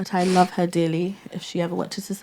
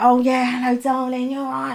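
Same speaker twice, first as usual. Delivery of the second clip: put-on elderly lady voice, chatty and pitched up; 5 semitones higher than usual.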